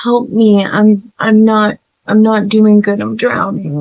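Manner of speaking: put-on sorrowful, sad, begging and pleading voice. Retelling a creature faking a brother's voice at the door, imitating sad voices. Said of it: "like making all these sad voices".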